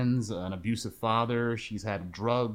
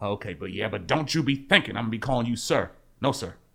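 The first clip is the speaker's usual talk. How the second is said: put-on grumpy voice; 3 dB louder than usual. Quoting a film scene, grumpy Lieutenant Dan voice. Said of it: "Dan is still grumpy".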